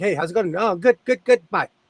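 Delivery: fast Southern California chatter. Showing how Southern Californians talk before learning to slow down, fast Southern California talk. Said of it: "Southern Californians we talk like this".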